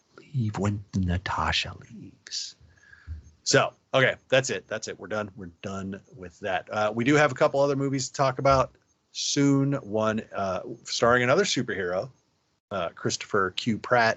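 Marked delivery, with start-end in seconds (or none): 0.2-2.5 creepy, slow put-on voice. Wrapping up the movie talk, repeating the last advice in a creepy Biden voice. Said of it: "Let me give my creepy Biden voice".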